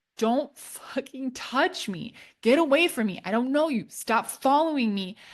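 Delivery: put-on held-back, slow, deliberate yelling. Telling a story about yelling at a guy, retelling a yell. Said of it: "I'm like yelling at the guy".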